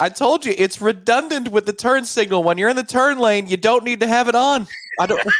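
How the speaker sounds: high, heated shouting. Two people argue in a car, yelling at each other. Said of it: "Why are we yelling at each?".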